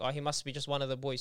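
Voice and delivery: ordinary talk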